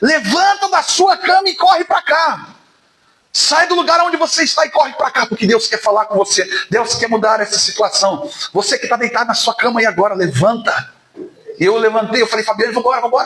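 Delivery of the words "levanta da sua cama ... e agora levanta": mock preacher crying out, pitched up, through microphone. Speaker recalling someone shouting into a microphone on a live stream, imitating someone shouting. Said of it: "gritava assim no microfone".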